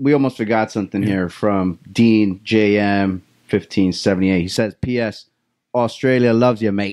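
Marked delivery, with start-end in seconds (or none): 4.8-6.9 attempted Australian accent. Reading out a viewer's message, doing their best australian accent. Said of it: "That's my best Australian accent".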